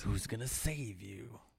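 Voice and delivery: put-on old-school movie trailer narrator voice. Talking about a favorite action movie's trailer, quoting it in old-school movie trailer voice. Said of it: "That old school guy's voice".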